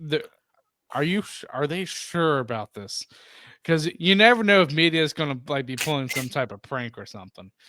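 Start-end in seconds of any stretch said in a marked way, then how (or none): 0.0-3.0 mock, halting, stumbling, incredulous tone. Retelling own first reaction to surprising news: retelling own disbelief. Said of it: "in disbelief".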